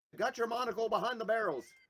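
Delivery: high, loud yell.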